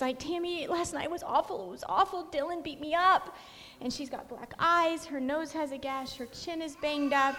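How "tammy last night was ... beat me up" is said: words broken by crying, tearful. Retelling what a beaten woman said at her van window; imitating someone crying. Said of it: "and she's crying".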